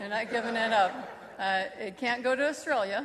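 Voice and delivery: joking while laughing.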